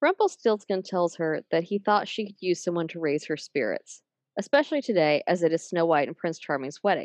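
ordinary delivery

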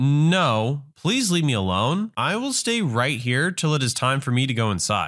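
ordinary delivery

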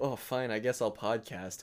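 ordinary talk

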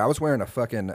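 plain

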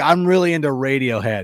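ordinary talk

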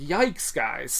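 ordinary talk

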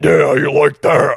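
mock deep, slow, loud bedroom voice. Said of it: "do not lower the octave of your voice for sex".

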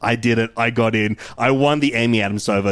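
ordinary talk

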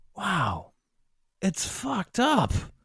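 genuinely taken aback, high, swooping surprise. Reacting to another speaker who admits arguing in YouTube comments, sounding surprised. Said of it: "You sound so surprised".

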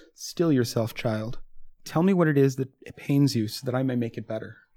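soft, gentle, very soothing voice. Voicing a woman who comforts Mahari, very soothing voice. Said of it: "says in a very soothing voice".

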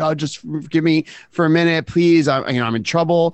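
frantic, hysterical, tearful crying voice. Retelling a woman at the door begging to use the phone: imitating a hysterical crying woman. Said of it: "started crying that she needed to use the phone and, like, hysterical".

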